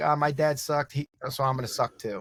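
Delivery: ordinary delivery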